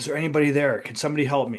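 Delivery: ordinary talk, nothing marked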